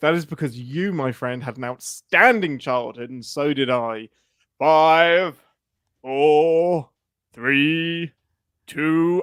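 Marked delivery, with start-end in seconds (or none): 4.6-9.2 loud, very slow countdown, four stretched out. Showing how a countdown from five sounds: Thunderbirds countdown voice. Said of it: "in a Thunderbird's voice".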